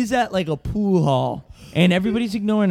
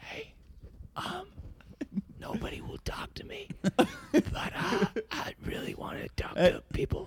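hushed, very quiet whisper, barely voiced; 10 semitones higher, 14 dB quieter than usual. Telling a secret to two guys at a pool hall: whispering. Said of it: "let me whisper you a secret".

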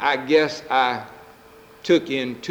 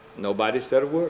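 ordinary talk, nothing marked

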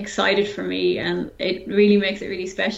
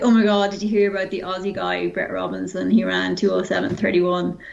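plain

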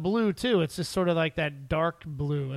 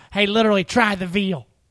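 put-on corny, joking waiter voice; 3 semitones higher, 8 dB louder than usual. Recounting an awful dinner, the speaker imitates a waiter throwing out zingers: corny waiter impression. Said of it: "Guess my impression".

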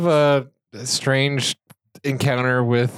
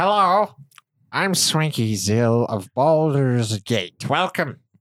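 slow, drawn-out put-on gnome voice. Voicing the gnome who runs the magic shop, greeting the players: Swanky Zill gnome voice. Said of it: "there's a gnome who, that's Swanky Zill. He's like".

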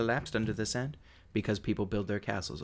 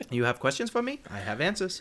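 put-on shop clerk accent, pitched much higher; 4 semitones higher, 4 dB louder than usual. In a role-play, a character addresses the players in a convenience store clerk accent. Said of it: "it sounds like I'm walking into a Seven Eleven".

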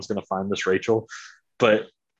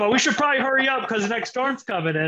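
put-on thick Canadian accent, higher pitch; 13 semitones higher than usual. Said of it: "just thick Canadian accent".

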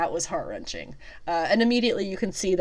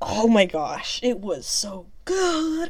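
restrained excitement, swooping, yell held in; 4 semitones higher than usual. Speaker reacts to a scene they found so good: excited, holding back a yell. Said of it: "I'm trying not to yell".

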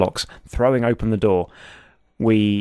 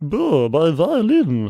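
comic put-on character voice, high and swooping; 5 semitones higher than usual. Narrating objects flying back to their places as voices cry out, character voice. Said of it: "That was a great voice".

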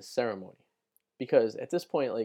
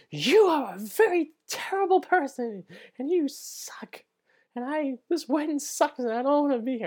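mock unhinged screaming, very high and slow; 13 semitones higher than usual. Retelling a drunken fight in a parking lot: retelling a scream like a lunatic. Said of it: "I start screaming like a lunatic".

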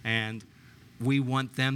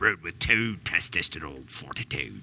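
very deep, low put-on pirate accent; 7 semitones lower than usual. Doing a mock radio ad tagline, in a pirate accent. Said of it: "I have to do it with the pirate accent".

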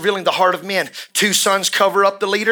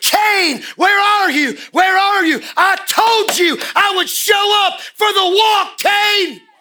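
put-on, very high, drawn-out yell; 13 semitones higher, 3 dB louder than usual. Acting out a call to Cain at the opened gates: imitating someone yelling. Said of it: "He started yelling".

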